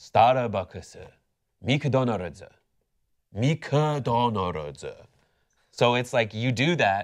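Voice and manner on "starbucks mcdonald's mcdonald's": poorly done Japanese accent. Answering how to say brand names so locals understand: bad japanese accent. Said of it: "a shitty Japanese accent".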